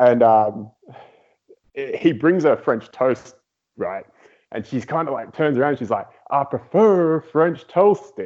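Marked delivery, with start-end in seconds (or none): 6.3-8.3 very bad put-on Southern accent, slow. Retelling what a woman said back to him, in a bad Southern accent. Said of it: "in my worst Southern accent ever".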